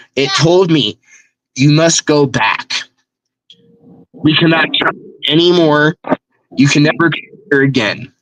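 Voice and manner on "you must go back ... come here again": several voices speaking together as one monster. Retelling what a many-headed creature told the speaker on a trip: loud creature voice, many voices. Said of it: "in a loud voice and different voices".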